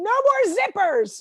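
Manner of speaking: high, slow, loud scream. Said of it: "walk around the house screaming".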